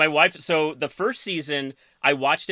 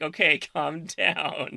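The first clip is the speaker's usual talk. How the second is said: put-on soothing, calming tone, slower. Retelling what the woman beside her said when she shrieked: imitating someone calming her down. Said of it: "And she's like".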